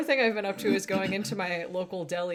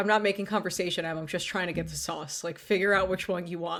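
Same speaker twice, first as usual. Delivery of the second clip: ordinary delivery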